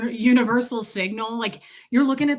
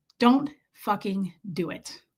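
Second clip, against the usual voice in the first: ordinary delivery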